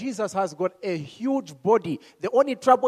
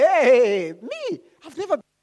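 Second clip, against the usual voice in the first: put-on shocked tone, higher and louder; 5 semitones higher, 6 dB louder than usual. Retelling a scripture scene, acting out Saul: Saul acting shocked. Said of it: "And the guy was shocked, like".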